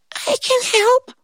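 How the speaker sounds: put-on teeny tiny, very high voice. Reading a story aloud, voicing the ant offering help in a tiny little voice. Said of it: "this tiny little voice that said".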